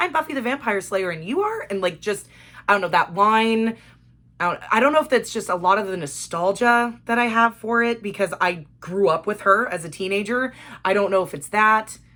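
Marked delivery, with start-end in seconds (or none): 0.0-1.7 put-on snarky, smart-mouthed, pitched-up sing-song tone. Retelling a scene where Buffy answers a captor: imitating Buffy's snarky attitude. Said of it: "with this snarky bitch-ass attitude".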